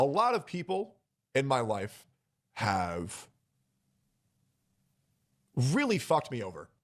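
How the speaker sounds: voice welling with emotion, swooping pitch. A content creator talking about people in their life, getting emotional. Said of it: "I'm getting emotional".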